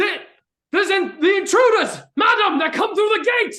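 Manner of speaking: shrill, very high and loud screaming. Voicing a guard who spots intruders, screaming guard. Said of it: "you hear a scream from the other person saying".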